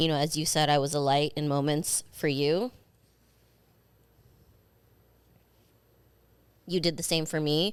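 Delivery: tearful, crying while talking. Saying goodbye to a departing co-host: tearful. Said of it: "now I'm gonna fucking start crying again".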